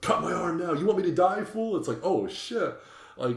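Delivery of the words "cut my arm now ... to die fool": high-pitched, loud screaming. Retelling a scene where a character screams at number two: imitating someone screaming. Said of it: "she's just, like, screaming at him and she's like".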